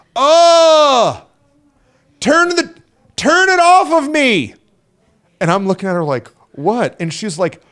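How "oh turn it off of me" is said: very slow, high acted yell, oh stretched long. Retelling how a woman yelled when the camera turned to her, retelling a yell. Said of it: "she starts yelling".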